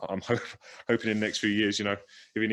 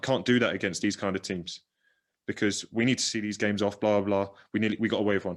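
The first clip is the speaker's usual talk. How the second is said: ordinary delivery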